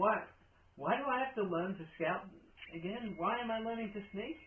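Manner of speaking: small, squeaky, high mouse voice. Narrator voices a mouse heard talking up ahead, in a mouse voice. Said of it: "you hear a voice of a mouse".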